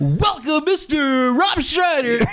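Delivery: very high, on-air radio DJ voice. A host welcomes the guest on the show, in a radio DJ voice. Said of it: "You want me to do the DJ voice?".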